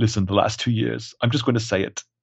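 put-on fumbling man's voice with British accent. Quoting Vision in a movie moment: Hugh Grant impression. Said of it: "I'm trying to do, uh, Hugh Grant".

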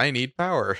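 odd, mechanical, strange robot voice. Imitating an ai demanding power, in a weird robotic voice. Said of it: "says it like a weird, like robotic".

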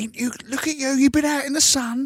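high, far-off, doting parent voice, cooing and marvelling.

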